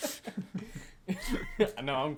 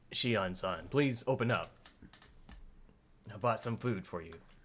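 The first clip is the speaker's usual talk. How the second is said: low, level delivery; 4 semitones lower than usual. Voicing a character knocking at a door: monotone flat Kasai voice. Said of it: "You do it very monotone and flat".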